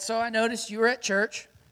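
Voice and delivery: plain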